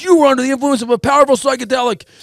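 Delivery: put-on yelling. Retelling how a friend sat them on a couch: imitating someone yelling. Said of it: "starts yelling at me".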